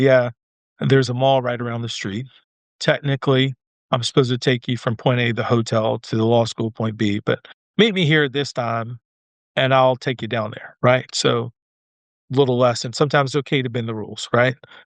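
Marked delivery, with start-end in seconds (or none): none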